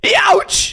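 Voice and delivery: very high, squeaky, goofy yelp. Answering a viewer's request to say a word: silly voice. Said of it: "say "Youch" in a silly voice".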